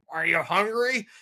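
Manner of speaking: high-pitched put-on old geezer voice. Retelling a strange anonymous story, voicing the talker in an old man's voice. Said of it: "talking to me like in an old man's voice".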